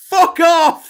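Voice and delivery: sudden, startling, shrill, very loud and high shout. Imagining the Labour leader telling America off, a sudden shout. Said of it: "Sorry for making anyone jump then with my fuck off".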